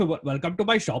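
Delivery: put-on full-on, strong Indian accent. Imitating an uncle who owns a shop: full-on Indian accent. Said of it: "that kind of full-on s-".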